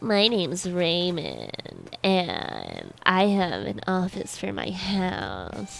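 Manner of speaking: creaky, very slow, drawn-out heavy vocal fry. Describing Raymond, similar to the previous person: Raymond impression with vocal fry. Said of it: "just with a little more vocal fry and a little higher pitch".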